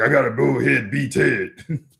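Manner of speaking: rough, slightly growled voice. Showing how the growling voice for Ted the tiny bug sounds: growling Ted voice. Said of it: "in order for me to be Ted, I have to growl a little bit".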